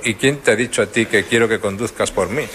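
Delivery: ordinary talk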